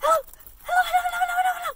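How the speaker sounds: very high, super fast hellos rattled off nonstop. Leading the audience in a hello game, saying hello very fast. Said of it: "Let's say hello as fast as we can".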